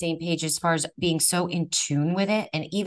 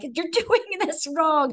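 put-on shrill, piercing, high, shrieking scream; 10 semitones higher than usual. Retelling a jab that missed the vein, acting out screaming. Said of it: "I'm screaming".

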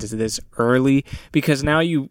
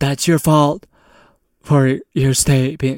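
put-on dumb girl voice. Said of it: "my impression for the president".

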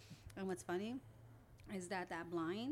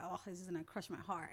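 ordinary delivery

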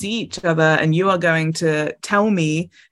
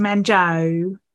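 imitated Essex accent. Repeating the nickname she calls him: essex accent. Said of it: "instead of saying that normally, she says it in an Essex accent, so she goes".

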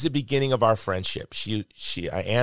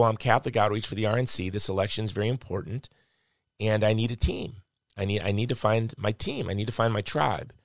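normal talking voice

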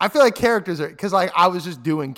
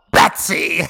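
put-on giggling villain voice, louder; 5 dB louder than usual. Doing a requested impression of the Joker as Mark Hamill. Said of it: "Give me Mark Hamill Joker".

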